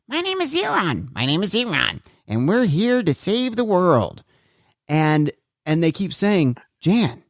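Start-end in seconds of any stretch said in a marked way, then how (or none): 0.1-4.2 strange otherworldly alien voice, high, swooping. Recalling a tape recorder that kept repeating a message: weird alien voice. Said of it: "a weird a weird alien voice".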